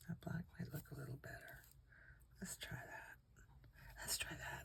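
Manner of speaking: very quiet, breathy, barely voiced whisper. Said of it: "I don't know why I'm whispering again".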